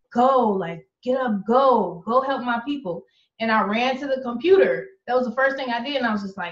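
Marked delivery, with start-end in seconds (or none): none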